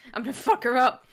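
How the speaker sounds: furious, angry, threatening tone. Speaking in character to Gris and Galen while getting angrier: angry threat. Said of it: "getting angrier and angrier".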